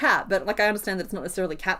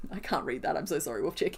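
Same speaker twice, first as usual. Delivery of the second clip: usual speaking voice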